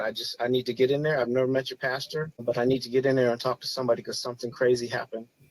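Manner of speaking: usual speaking voice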